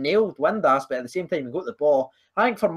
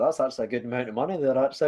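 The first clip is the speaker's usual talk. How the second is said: pleased, self-satisfied, self-approving manager-type voice; 4 semitones lower, 4 dB quieter than usual. Acting out the manager reacting to his own contract offer: imitating Craig Levein. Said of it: "He was like".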